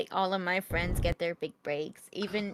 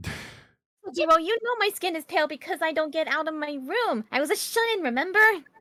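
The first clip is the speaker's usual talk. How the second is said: put-on teenage girl voice, higher and louder; 10 semitones higher, 5 dB louder than usual. Voicing Futaba answering Sojiro's teasing: Futaba voice. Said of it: "I am doing, um, his daughter Futaba".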